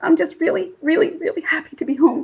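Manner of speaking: tearful happy crying. Glad to be home after a really long time away, crying happy tears. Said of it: "these are happy tears".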